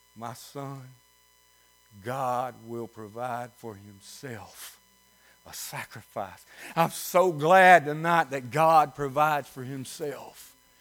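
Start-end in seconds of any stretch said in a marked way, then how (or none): 0.2-6.5 put-on very quiet, low, choked-up, holding back tears. Preacher retelling Abraham's words to his son, acting out choked-back tears. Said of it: "Abraham choked back the tears".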